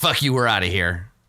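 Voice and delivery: orc character voice. Voicing orcs who refuse and leave: voicing the orcs. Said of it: "the orcs are just like".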